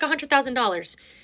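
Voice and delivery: ordinary talk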